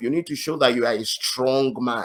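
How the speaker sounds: normal talking voice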